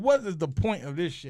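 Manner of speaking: ordinary talk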